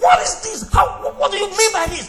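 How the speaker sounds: high, loud, furious scream.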